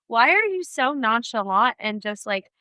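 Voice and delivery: ordinary talk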